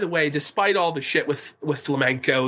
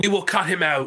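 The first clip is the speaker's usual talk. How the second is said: plain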